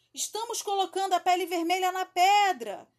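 loud, high shout carrying far. A pirate answering a voice he takes for his captain's: shouting. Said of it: "gritou Barrica".

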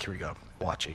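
put-on sarcastic tone. Recalling mowing the grass alone for the first time, retelling a sarcastic remark. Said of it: "I'm being so sarcastic as I'm doing this".

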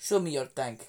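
put-on Russian accent. Asking the other speaker to say the line with an accent, demonstrating a russian accent. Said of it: "you say that with an accent, Russian accent?".

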